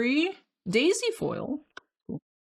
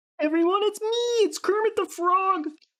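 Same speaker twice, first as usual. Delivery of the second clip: tensed throat, pitch raised way up; 9 semitones higher than usual. Demonstrating a voice that puts a lot of tension in your throat, the Kermit voice. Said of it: "to do the Kermit voice".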